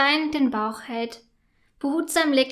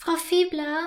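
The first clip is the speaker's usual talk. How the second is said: sheepish and meek, higher; 4 semitones higher than usual. Max comes up to Frau Fiebler before the show and addresses her sheepishly. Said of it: "sagt er kleinlaut".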